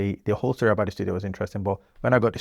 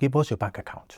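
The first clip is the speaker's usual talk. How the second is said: mock Nigerian accent, higher; 4 semitones higher than usual. Retelling what a Nigerian client said to him, in a put-on Nigerian accent. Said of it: "in a very Nigerian fashion".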